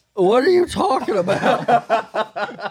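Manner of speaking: sleepy, drowsy delivery.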